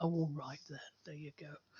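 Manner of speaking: mock put-out, grudging, unwilling tone. Imitating people handing over the food after the click: mock-grudging, reluctant. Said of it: "they deliver it like".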